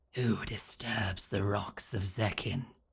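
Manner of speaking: slow, rasping, barely audible creature-like near-whisper. An entity forming from green mist over the water speaks: rasping, barely audible voice. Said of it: "in a rasping, barely audible voice".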